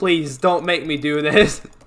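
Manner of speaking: acted, pleading, begging tone. Retelling having to go up a hill, retelling begging for mercy. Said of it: "begging for mercy".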